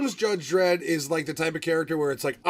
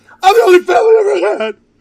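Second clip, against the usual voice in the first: put-on cracking whiny voice, higher and louder; 14 dB louder than usual. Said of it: "where his voice cracks".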